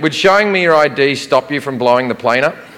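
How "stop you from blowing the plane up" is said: ordinary talk, nothing marked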